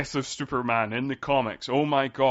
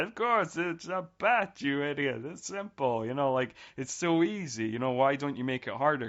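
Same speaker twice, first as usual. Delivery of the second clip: sneering, mocking tone. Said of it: "Jim Carrey mocks the simplicity of Batman's riddle".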